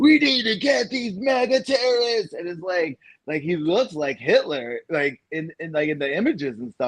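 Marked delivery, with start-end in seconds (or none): 0.0-2.3 very high-pitched, screamed speech. Retelling a speech to the other speaker, imitating someone screaming. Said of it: "just screaming like".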